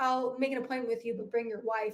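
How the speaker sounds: plain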